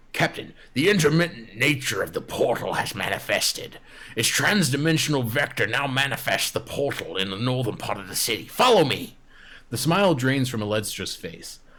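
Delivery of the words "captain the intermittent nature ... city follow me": brash, overbearing, blustering delivery, too close. Trushi, face inches from Captain Alestra's, speaking in a far too loud voice. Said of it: "speaks in a far too loud voice".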